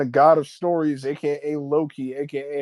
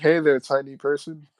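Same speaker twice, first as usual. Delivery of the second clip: plain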